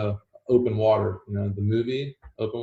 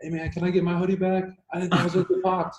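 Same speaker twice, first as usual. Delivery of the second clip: put-on high, pitched-up yell full of protest; 8 semitones higher than usual. Retelling how the guy who broke in yelled for his hoodie: imitating someone yelling. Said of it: "he's yelling at me".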